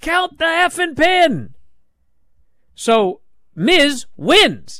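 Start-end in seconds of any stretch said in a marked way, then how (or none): 0.0-1.5 high-pitched, demanding scream. Retelling a wrestling finish, a wrestler screaming at the referee: imitating someone screaming. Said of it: "Miz is screaming".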